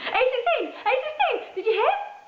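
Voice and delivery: very high, helium-squeaky, joyful, excited voice. First-person narrator learns entrants must be sixteen or over: helium-high excited voice. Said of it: "so excited I sound like I've inhaled a helium balloon".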